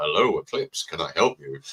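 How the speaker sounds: deep, bassy, husky voice. Retelling how they answer the phone with a cold: husky phone voice. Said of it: "so it sounds quite husky".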